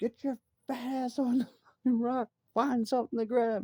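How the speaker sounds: acted, shrill, very high-pitched scream. Hanging off rock cracks with a big man grabbing his foot, retelling own screaming. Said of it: "And I'm screaming at him".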